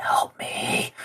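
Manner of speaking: weak, dying, pleading whisper. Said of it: "Reinhardt just going".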